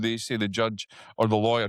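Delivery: ordinary talk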